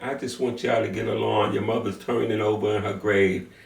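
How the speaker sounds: tearful, weeping, pleading voice. Retelling an aunt's plea for family to get along: imitating someone crying. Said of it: "she's crying and saying".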